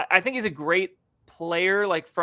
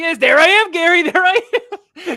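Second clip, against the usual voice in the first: very high, loud cartoon-style squealing yell; 11 semitones higher, 11 dB louder than usual. Comparing a player to a cartoon commercial: quoting SpongeBob Bran Flakes commercial. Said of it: "like the Bran Flakes commercial on SpongeBob".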